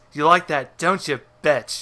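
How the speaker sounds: put-on dirty talk voice. Acting out a cartoon scene where Jared talks dirty to Satan: Jared from South Park talking dirty. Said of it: "he's trying to talk dirty to Satan".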